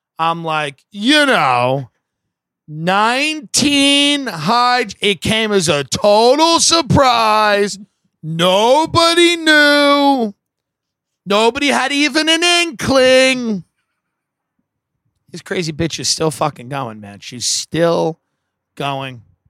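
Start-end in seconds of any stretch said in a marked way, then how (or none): 0.9-13.7 very slow, heavy, pitched-up sarcasm, "knew" stretched. Retelling own remarks at the nine eleven memorial: imitating own very sarcastic delivery. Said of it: "I would deliver it very sarcastically".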